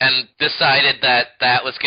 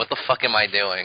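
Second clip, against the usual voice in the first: bewildered, confused outburst, lower, quieter; 4 semitones lower, 4 dB quieter than usual. Imagining a clone character constantly asking in bewilderment: imitating a bewildered character. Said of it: "constantly going like".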